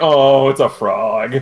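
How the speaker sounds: put-on disappointed voice. Retelling a player's reaction to finding a frog: imitating a disappointed player. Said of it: "I can hear the disappointment in his voice".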